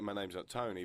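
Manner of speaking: normal talking voice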